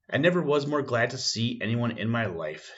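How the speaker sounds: plain reading voice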